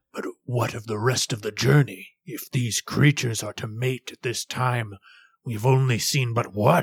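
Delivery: gruff, rough-toned voice. Game master voicing a traveler addressing the caravan, in a gruff tone. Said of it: "speaks in a gruff tone".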